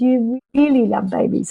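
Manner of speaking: put-on small, little voice. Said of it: "this little voice started coming out of her mouth".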